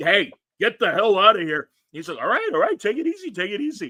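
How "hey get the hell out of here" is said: acted shout, louder and higher. Retelling confronting a man in front of people, re-enacting a shout. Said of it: "I am shouting and pointing".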